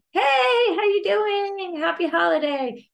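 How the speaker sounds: very high, loud, stretched-out excited voice. Showing what not to say to someone met in the market: excited greeting. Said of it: "don't say an excited".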